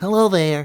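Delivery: very high-pitched, very loud character voice. Showing the vocal trigger used to find the character: Big Bird voice. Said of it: "there's a, a vocal trigger that I do".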